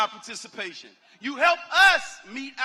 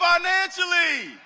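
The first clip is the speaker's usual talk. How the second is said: pitched-up call-out leading a spoken response; 5 semitones higher than usual. Leading graduates in a pledge and asking them to say it: said loudly. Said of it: "y'all gotta say that loud".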